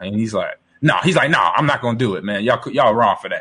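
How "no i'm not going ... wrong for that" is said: imitated sharp angry snap. Retelling a caller refusing a challenge: imitating someone snapping angrily. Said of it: "snapping at us. He's mad".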